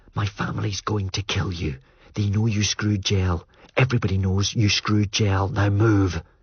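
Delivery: hissed whisper under the breath. Elle, mouth at the narrator's ear, urges the narrator to move: hissed whisper. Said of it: "she hissed".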